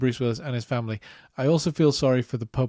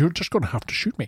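stoic, composed, unshaken put-on voice; 3 semitones higher than usual. Quoting a film character who sounds like Sean Connery: imitating Takagi sounding like Sean Connery. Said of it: "he sounds like he's Sean Connery".

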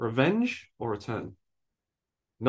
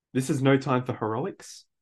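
ordinary talk

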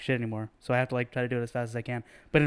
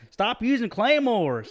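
put-on heavy Louisiana accent, very high-pitched; 10 semitones higher than usual. Retelling what another player said to them in game chat, heavy Louisiana accent. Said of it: "Deep Louisiana".

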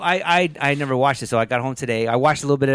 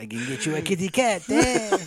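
clumsy, bad put-on French accent; 4 semitones higher, 3 dB quieter than usual. Imitating a cab driver offering to hook someone up: bad French accent. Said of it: "bad French accents".

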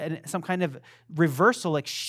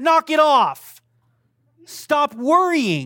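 full-on loud, high-pitched scolding yell; 10 semitones higher, 9 dB louder than usual. Speaker addressing listeners who need to be yelled at, just before a prayer, yelling. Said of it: "if you need to be yelled at".

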